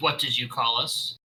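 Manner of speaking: slow, drawn-out, menacing snarling growl. She answers after being called cowards going for easy prey: snarling. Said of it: "she just snarls".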